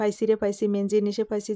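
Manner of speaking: ordinary talk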